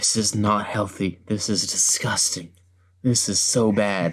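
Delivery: hushed, low whisper. Retelling what someone said about a huge food order: imitating a whisper. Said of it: "just whispers".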